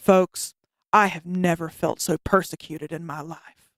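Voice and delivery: put-on solemn, earnest, very serious, grave voice. A speaker retells a man's reply to her, imitating a very serious voice. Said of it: "says in this very serious voice".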